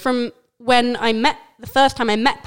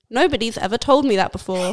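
ordinary delivery

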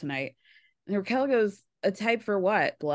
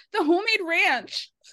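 put-on piercing, very high, shrill outcry; 10 semitones higher than usual. Retelling a funny moment from the episode: imitating Raquel yelling. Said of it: "yells out".

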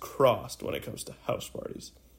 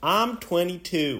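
put-on Southern US accent, in a reading-aloud tone; 4 semitones higher than usual. Reading aloud from the laptop in a Southern accent. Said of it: "A southern accent".

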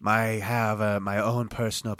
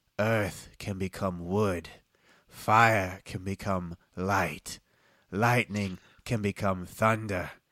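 put-on middle-aged man voice. Game master voicing a middle-aged human explaining the types, middle-aged man character voice. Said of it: "He's human. Yeah, he's a middle-aged man".

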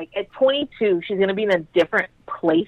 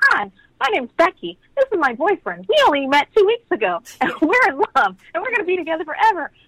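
mock optimistic voice, higher pitch; 9 semitones higher than usual. Imitating a teen mom introducing her boyfriend: imitating an optimistic teen mom. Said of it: "they're so optimistic".

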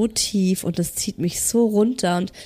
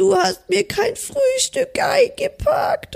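mock sadness, much higher. Retelling what he said when he came home, imitating a sad complaint. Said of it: "er war ganz traurig".

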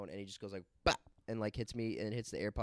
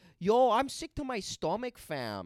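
put-on very high, very loud Toronto girl slang accent; 12 semitones higher, 8 dB louder than usual. Explaining regional accents, doing a Toronto girl accent. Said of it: "the Toronto accent, ... Vicky style girl that's like".

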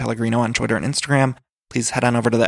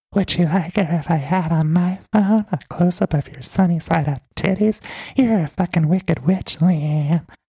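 put-on ASMR-style whisper, pitched higher; 6 semitones higher than usual. Retelling a fight, imitating Brandy whispering like ASMR. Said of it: "Brandy whispers everything".

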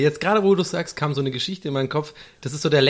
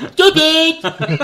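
goofy put-on yell, high, at full volume; 14 semitones higher, 9 dB louder than usual. Retelling a running gag from walking to school: imitating a loud shout in a silly voice. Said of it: "Immer mit dieser Stimme und immer voll laut".

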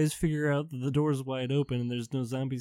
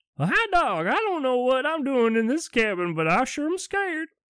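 very high hillbilly voice; 12 semitones higher, 5 dB louder than usual. Retelling what a man said when he suddenly turned hillbilly, hillbilly voice. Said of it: "He got real, like, hillbilly all of a sudden".

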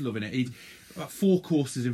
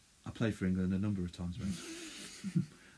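hushed, close-in, very soft stage whisper; 5 semitones lower, 10 dB quieter than usual. Retelling what a player half-whispered to a nervous guy: imitating a quiet half-whisper. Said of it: "very quietly sort of whispered in his ear".

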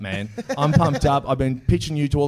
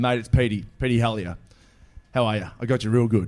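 usual speaking voice

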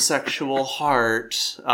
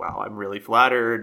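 ordinary talk

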